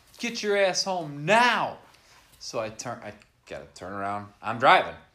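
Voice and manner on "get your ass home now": mock yell, pitched up. Retelling a phone call in which Ron yelled at Jay, imitating Ron yelling. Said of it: "He's yelling, and I can hear him yelling".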